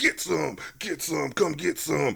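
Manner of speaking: rasped like a soldier. Retelling a movie scene while imitating Lazarus as a Vietnam soldier. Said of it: "he's talking like a, a, a Nam soldier".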